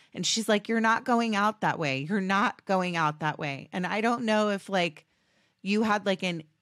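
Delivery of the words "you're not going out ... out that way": ordinary talk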